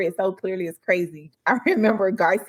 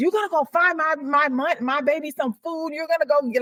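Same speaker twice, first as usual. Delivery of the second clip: mock frantic, high, furious, stumbling yell; 7 semitones higher than usual. Retelling a full-blown argument between mom and aunt: imitating mom in furious argument. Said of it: "she was losing her mind".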